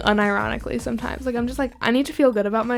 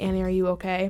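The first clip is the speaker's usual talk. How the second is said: put-on whisper, lower and quieter; 4 semitones lower, 7 dB quieter than usual. Describing a music video where everyone whispers, imitating a whisper. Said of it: "they're all whispering, like".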